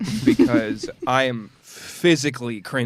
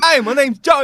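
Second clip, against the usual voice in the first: shrill, very high, very loud Australian accent; 13 semitones higher, 8 dB louder than usual. Goofing around with friends, the speaker does a character's line: Joey Wheeler voice, Australian-sounding. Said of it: "why am I Australian?".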